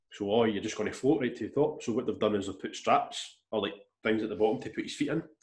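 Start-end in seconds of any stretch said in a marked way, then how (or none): none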